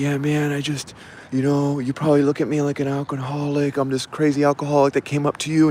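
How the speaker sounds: acted-out weepy, sobbing, tearful crying voice. Retelling a crying stranger who hugged the speaker; imitating a man crying. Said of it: "and he's crying, crying, crying".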